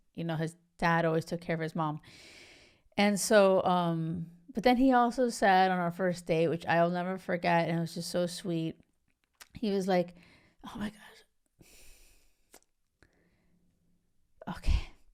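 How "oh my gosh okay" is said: near-whispered, breathy, choked with emotion. Recalling what he said on their first date, choked up. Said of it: "I'm trying to get the words out".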